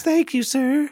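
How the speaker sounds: put-on piping, very high, loud child's voice. Telling about trick-or-treating, acting out a kid: high-pitched kid voice. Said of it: "High-pitched kid voice".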